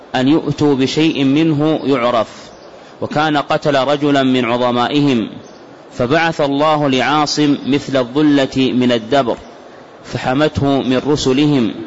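normal talking voice

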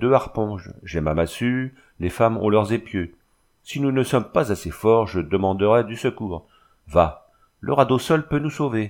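ordinary delivery

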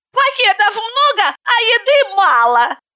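very high-pitched whiny complaining grumble. Katerina complains while settling herself onto the back seat. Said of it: "пожаловалась Катерина".

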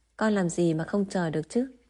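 ordinary delivery

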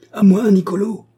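very high, choked, strangled howl. A locksmith gripped by the throat howls for help in a strangled voice. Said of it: "hurla le serrurier d'une voix étranglée".

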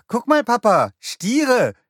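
high, loud, excited calling out.

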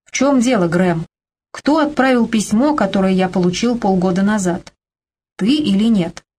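usual speaking voice

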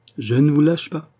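bright and gleeful. Narrator reads a man's line as he shakes another man's hand, gaily. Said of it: "dit gaiement René".

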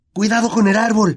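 shrill, loud, high-pitched shout. Narrator reads a warning as the car plunges toward the ground, shouting. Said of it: "gritó Harry".

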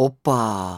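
musing, drawn out. Narrator reads a young man reacting to talk of a squirrel, thoughtful drawl. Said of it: "задумчиво протянул парень".

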